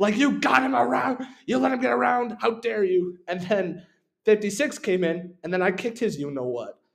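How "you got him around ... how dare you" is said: high, screaming coach-style rant. Recalling the coach screaming at another player during the game: imitating a screaming coach. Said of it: "the coach was screaming at him".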